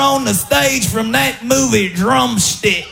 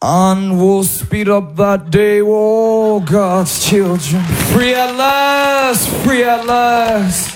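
low, deep orator's voice, long stretched "oh"; 5 semitones lower than usual. Dared by someone to do the king, speaker gets up and performs: impression of the king. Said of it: "if you can do an impression of the king".

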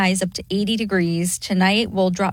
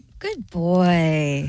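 put-on tone like praising a dog, "boy" drawn out; 3 semitones lower than usual. Showing how she praises her sons: saying it like to a dog. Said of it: "I say it like they're a dog".

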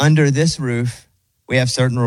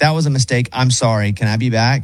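usual speaking voice

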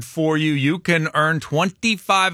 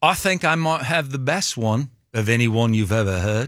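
put-on British accent; 3 semitones lower than usual. Guest shows off an accent during an interview, in a British accent. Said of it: "it's a very good British accent that you did".

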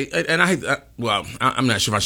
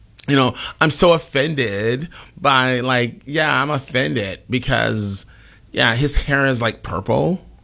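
slow, mocking girl voice.

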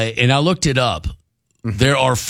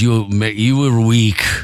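put-on Russian wrestling coach voice, much slower; 2 semitones lower than usual. Telling friends about their old Russian wrestling coach, the speaker imitates Vlad, Russian coach. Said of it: "he would talk like this".

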